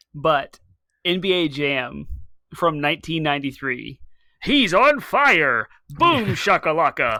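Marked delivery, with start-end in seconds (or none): 4.4-7.1 hyped announcer voice, louder and higher. Asked which video game announcer voice he'd want, the guest does NBA Jam announcer voice. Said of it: "I thought you weren't".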